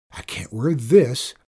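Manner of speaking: usual speaking voice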